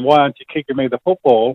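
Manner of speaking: normal talking voice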